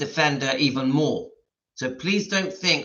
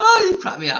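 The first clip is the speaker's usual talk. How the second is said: very high, loud speech bubbling with laughter; 6 dB louder than usual. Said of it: "I don't wanna laugh".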